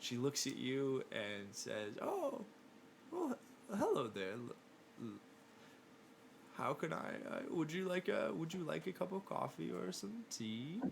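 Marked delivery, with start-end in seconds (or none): 2.0-10.8 put-on old woman voice, much higher. Narrating a scene, voicing an elderly woman behind a counter greeting visitors, elderly woman voice. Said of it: "an elderly woman behind the counter".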